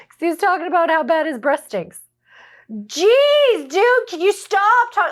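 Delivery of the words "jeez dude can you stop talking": put-on blunt, loud, high, drawn out, "jeez" stretched. Retelling a boy's remark to another kid at lunch: imitating him talking loudly. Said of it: "Like he said it in that loud".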